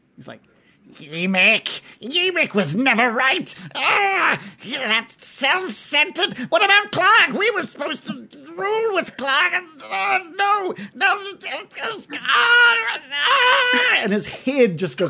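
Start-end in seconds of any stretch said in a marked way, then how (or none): 1.0-14.0 very high, swooping, exasperated, frustrated goblin voice. Voicing a goblin as frustration crosses his face: frustrated goblin outburst. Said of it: "frustration cross Billy's face".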